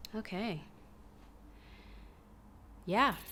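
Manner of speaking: whispered, very quiet, breathy, sighing words. Talking to video viewers before reviewing a pair of slippers, sighing. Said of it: "(she sighs)".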